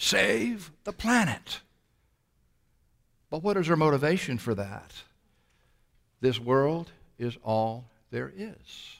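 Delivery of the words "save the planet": high, slow, mild mock yell and scream. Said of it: "will yell and scream".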